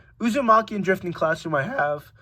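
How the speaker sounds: voice cracking. Listing manga series they have read, with the voice cracking. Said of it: "what was that voice crack?".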